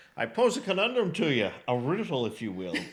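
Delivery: sing-song voice, pitch swooping up and down. Retelling a comedy sketch, quoting the Sean Connery character: Sean Connery impression. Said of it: "Sean Connery, and he's like".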